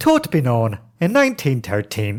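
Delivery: put-on, imitated Irish accent. Retelling what people said in dublin: put-on irish accent. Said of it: "Irish is flat. They're like".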